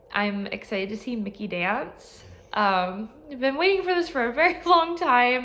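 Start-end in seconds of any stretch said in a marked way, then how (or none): 3.3-5.5 teary, crying through words, raised and pitched up. Thanking viewers before a long-awaited show, already crying. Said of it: "and I'm already crying".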